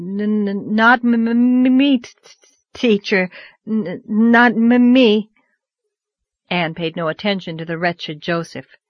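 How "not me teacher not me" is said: frantic, wild, very slow stutter, "me" drawn out. A pupil answers his teacher's look, stuttering out wildly. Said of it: "stuttered out wildly".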